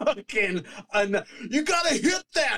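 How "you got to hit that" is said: very high-pitched, furious, angry yell. Imitating a fan in the stands yelling at a player: imitating an angry fan yelling. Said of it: "so mad yelling at elite athletes".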